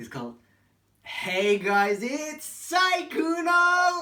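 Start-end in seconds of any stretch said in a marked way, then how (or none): 1.0-4.0 very loud, high, slow belted delivery. Imitating a streamer's YouTube intro: Sykkuno intro impression. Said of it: "that intro".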